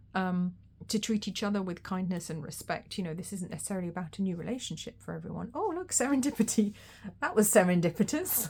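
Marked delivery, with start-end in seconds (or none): 6.0-8.5 loud chuckling, laughing-through-words delivery. Speaker reacts to their own joke mid-talk: laughing at own joke. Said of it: "I'm laughing at my own joke".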